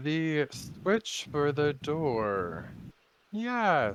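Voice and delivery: booming, very slow, loud giant voice, "door" stretched. Voicing a thirty-five-foot Ent answering a question about the door: giant tree Ent voice. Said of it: "as you're talking and explaining this, he".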